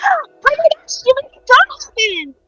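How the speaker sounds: very high, swooping, thrilled, gushing tiny pixie gasp. Voicing a tiny pixie who sees the guests: excited pixie gasp.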